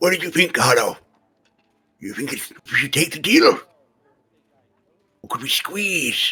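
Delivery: hushed whispering voice. Asking carlo in character about an offered deal: whispering. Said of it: "gonna whisper to him".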